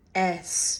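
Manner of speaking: the word ass in American pronunciation. Repeating a word from an American's message: American pronunciation of 'ass'. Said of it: "the American pronunciation, because she's American".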